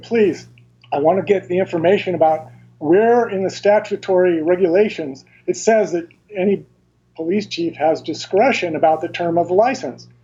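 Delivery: ordinary delivery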